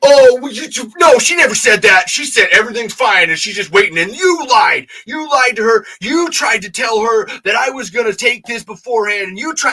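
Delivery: imitated angry ranting. Retelling how someone went off on the speaker: imitating someone going off angrily. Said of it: "He fucking goes off on me".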